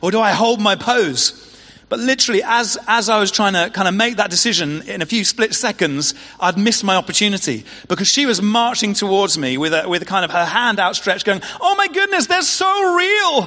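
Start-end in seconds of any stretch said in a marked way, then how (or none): 11.6-13.5 terrible put-on American accent at very high pitch. Retelling a woman reaching out toward the speaker, in a terrible American accent. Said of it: "That's a terrible accent".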